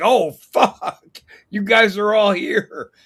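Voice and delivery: slow, caught-out, cornered surprise. Retelling showing up at someone's door: imitating Mustafa. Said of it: "He's like".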